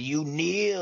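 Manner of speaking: play-acted, high, barked yell at full force. Acting out the villain forcing He-Man to kneel: imitating Skeletor yelling. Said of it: "And he's yelling".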